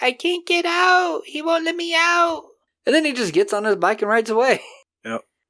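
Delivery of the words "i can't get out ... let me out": put-on very high, slow little child's voice. Speaker retells what an old man said to the woman helping him, kid's voice. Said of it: "he speaks with a kid's voice".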